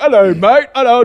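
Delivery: loud, clumsy, off Australian or British accent. Showing what a bad Aussie or Brit impression sounds like. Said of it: "when you do an impression of an Aussie or a Brit".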